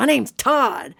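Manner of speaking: put-on comic, funny American Southern accent. Retelling a man correcting the speaker who kept calling him Theodore, Todd's funny Southern accent. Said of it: "he had a funny Southern accent".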